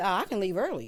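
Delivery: ordinary delivery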